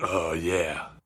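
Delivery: raspy cartoon voice like gargling gravel. Imitating Bob Hoskins as the New York cop: Bob Hoskins impression. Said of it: "Bob Hoskins is just going".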